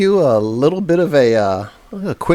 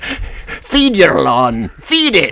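put-on generic Scottish accent; 3 semitones higher than usual. Asked by the other speaker to do the lawn Scotsman imitation again: imitating a generic Scotsman. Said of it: "I like your imitation".

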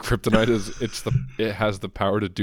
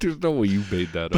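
ordinary talk, nothing marked

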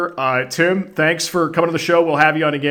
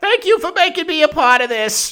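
very high, squeaky little cartoon rat voice; 13 semitones higher than usual. Thanking the hosts at the close, in a Rizzo the Rat voice. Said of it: "Your rat voice".

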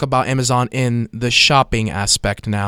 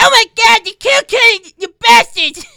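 shrill, very high, loud cartoon kid outburst; 7 dB louder than usual. Showing off one of your impressions from South Park, original Cartman impression. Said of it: "One of them is Cartman from South Park".

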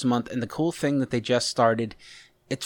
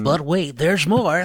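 cheesy, pitched-up late-night infomercial announcer voice; 5 semitones higher, 5 dB louder than usual. Podcast speaker busting out his infomercial voice again: stupid infomercial voice. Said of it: "my like stupid infomercial voice".

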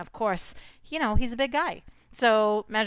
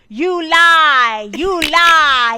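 very loud, very slow, drawn-out accusing bellow; 7 semitones higher, 15 dB louder than usual. Imitating a reality show man who always yells: imitating Riley yelling. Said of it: "he's always, like, yelling".

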